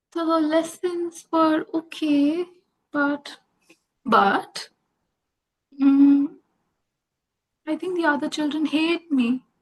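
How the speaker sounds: shrunken, very small, tiny voice. Narrator reading a child answering their mother about school, very small voice. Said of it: "They said in a very small voice".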